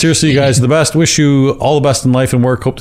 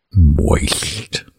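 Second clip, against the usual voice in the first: wet, spitty speech through a mouthful of spit; 9 semitones lower, 3 dB quieter than usual. Saying the disliked word on request: saying it with spit in mouth. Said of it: "let me put spit in my mouth when I say it".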